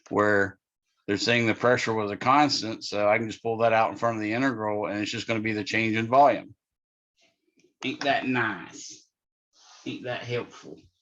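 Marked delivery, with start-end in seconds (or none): 7.8-10.7 voice dropped to a breathy near-whisper. Explaining a physics derivation, the speaker slips into a Ruthie from Ozark impression. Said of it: "my impression of Ruthie from Ozark".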